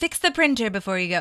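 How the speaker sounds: regal, grand, queen-like goddess voice. Retelling a character's line in a put-on goddess vocal effect. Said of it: "goddess vocal thing".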